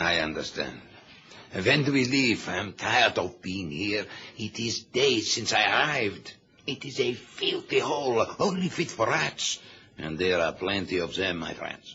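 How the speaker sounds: put-on strong German accent. Asking the escort when they leave: heavy German accent. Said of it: "We won't get a yard with your accent".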